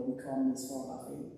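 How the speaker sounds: ordinary talk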